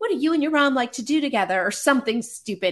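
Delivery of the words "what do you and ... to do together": play-acted, pitched-up, projected calling out. Retelling calling out a question to a star at a premiere: retelling own shouted question. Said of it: "I shouted out".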